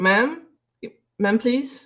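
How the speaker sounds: calling out after someone. Voicing a player character calling after a woman who walks off: calling out to someone. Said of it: "can I call to her".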